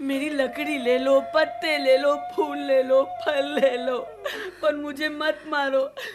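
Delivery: tree voice crying and pleading. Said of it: "पेड़ रोने लगा".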